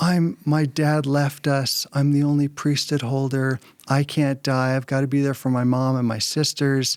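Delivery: mock tearful sobbing while talking. Retelling what a kid beside you said, in tears; imitating someone sobbing. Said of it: "And in tears, he was sobbing".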